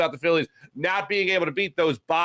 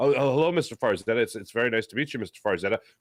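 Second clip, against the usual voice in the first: polite, courteous, respectful gentlemanly tone; 7 semitones lower than usual. Acting out a date meeting the father: imitating Jalen Hurts as polite gentleman. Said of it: "Jalen Hurts is the guy that's just like".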